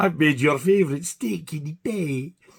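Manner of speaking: Scottish voice putting on posh airs. Imitating his mum while she is cooking, put-on posh voice, Scottish mum. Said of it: "she tries to put a posh voice on. And she's Scottish".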